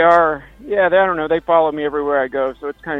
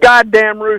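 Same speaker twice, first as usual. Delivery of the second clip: all-out, high-pitched screaming; 5 semitones higher, 4 dB louder than usual. Complaining about roosters that wake the speaker early: screaming at the roosters. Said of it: "I'm screaming right at you".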